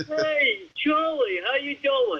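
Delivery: bad, thick, laid-on heavy Brooklyn accent. Recalling how he talked before working with a speech teacher, in a very bad Brooklyn accent. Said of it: "very, very bad Brooklyn accent".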